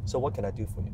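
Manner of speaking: soft, calm, composed, inquiring doctor tone. Showing the tone the speaker always uses: calm, questioning doctor tone. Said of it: "So my tone is always, hmm, ... It's a doctor tone".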